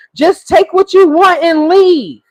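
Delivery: mock yelling, high-pitched. Retelling a woman who hears someone in the house: imitating someone yelling. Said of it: "she's yelling".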